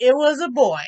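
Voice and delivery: ordinary talk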